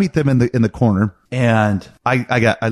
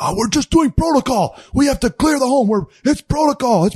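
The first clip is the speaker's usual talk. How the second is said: mock, acted yelling; 14 semitones higher than usual. Retelling a yelling match with an officer clearing the home, imitating an officer yelling. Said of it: "this officer keeps yelling".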